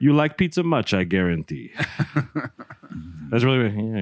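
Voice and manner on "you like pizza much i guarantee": heavy, thick, put-on Eastern European accent. Recalling a man who came with pizza, mimic him in a thick Eastern Bloc accent. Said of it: "some sort of like Eastern Bloc type accent. Very thick".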